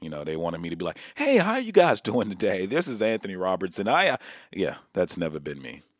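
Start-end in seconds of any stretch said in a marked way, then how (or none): 1.1-3.9 put-on corporate phone voice, inflected, raised, swooping. Showing the voice corporate phone jobs wanted: put-on inflected phone voice. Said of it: "put a little inflection in your voice".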